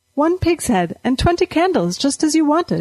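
bright, cheerful delivery. Narrating a woman setting down a bag for a widow, speaking brightly. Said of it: "she said brightly".

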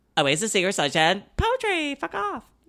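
rapid-fire delivery. Asked to say it again faster, rattling off film titles very fast. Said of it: "Say it again faster".

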